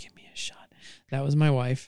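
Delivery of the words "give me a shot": eerie hushed whisper, quieter. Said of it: "that quiet, creepy La Llorona whisper".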